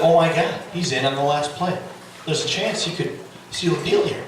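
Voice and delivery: plain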